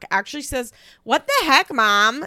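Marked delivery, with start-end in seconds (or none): 1.0-2.3 put-on very loud, high, thick Midwestern accent. Recapping Chelsea's reaction, quoting what she says to her mom: Chelsea's strong Midwestern accent. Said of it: "In like the most Midwestern accent I've ever heard her use".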